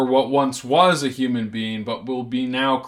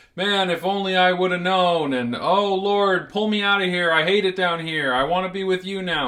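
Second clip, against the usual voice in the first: put-on, high, desperate begging screams; 6 semitones higher than usual. A speaker acts out the damned crying out to god, imitating desperate screaming. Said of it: "they're screaming".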